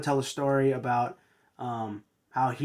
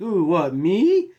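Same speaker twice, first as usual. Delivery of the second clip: snarky, rising high and loud.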